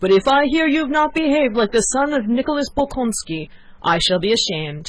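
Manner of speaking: put-on shrill, complaining old man voice. Narrator reads an old father's parting words to his son: querulous shriek. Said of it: "in a querulous voice, suddenly shrieked".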